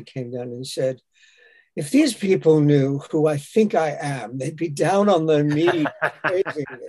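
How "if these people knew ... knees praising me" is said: very mock, tongue-in-cheek tone. Retelling what David Warner said on coming down, imitating David Warner's mock tone. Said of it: "in a very mock tone".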